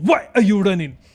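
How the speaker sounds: put-on Ugandan-accented speech. Quoting a Ugandan line after praising the accent: imitating a Ugandan accent. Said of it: "When they go".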